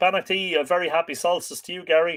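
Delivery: plain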